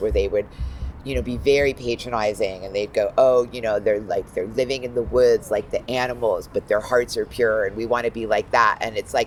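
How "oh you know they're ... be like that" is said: plain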